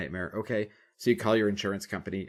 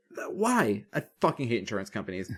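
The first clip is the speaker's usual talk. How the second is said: ordinary talk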